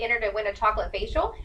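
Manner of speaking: ordinary talk, nothing marked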